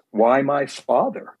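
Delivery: play-acted, somewhat angry edge. Recalling what they said to him about their father, reenacting a somewhat angry voice. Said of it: "in a somewhat angry voice".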